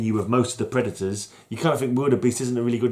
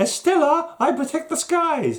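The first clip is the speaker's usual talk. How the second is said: high, feminine put-on voice. Reading a comic's hero line aloud as Stella: put-on lady voice. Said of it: "That was a lady voice".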